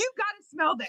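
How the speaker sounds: high, shouted, pushy tone. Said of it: "husband insisting she smell".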